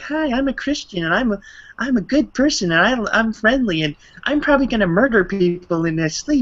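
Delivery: very high, creepy, smiling voice. Mocking Kirk Cameron's permanent creepy smile: creepy smiling Kirk Cameron voice. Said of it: "his face is permanently in a creepy smile, like".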